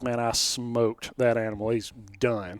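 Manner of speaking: ordinary talk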